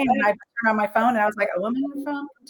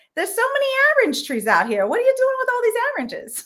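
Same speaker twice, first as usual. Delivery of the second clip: put-on accent from Queens, much higher pitch; 13 semitones higher than usual. Speaker imitates their cousin from Queens: imitating a Queens accent. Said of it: "She's from Queens".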